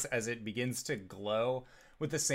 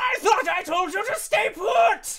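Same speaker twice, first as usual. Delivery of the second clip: angry monster shouting, higher and louder; 12 dB louder than usual. Voicing a cave creature yelling at a player character: creature yelling angrily. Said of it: "you hear this creature yell".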